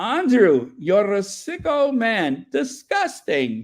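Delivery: put-on Scottish accent, high and swooping. Asked to prove being Scottish, the speaker says a line in a put-on Scottish accent. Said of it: "I can see the, the Scottish in you".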